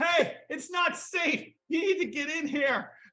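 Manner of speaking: loud shouting, calling out. In an improvised scene, calling a stranger inside to safety, yelling out a window. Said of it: "you're yelling".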